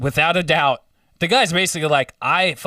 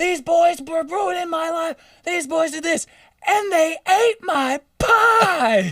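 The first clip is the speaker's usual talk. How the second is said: put-on very high, shrieking, screaming old woman voice. Retelling a story, imitating an old lady screaming out the front door. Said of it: "the old lady's like screaming out the front door".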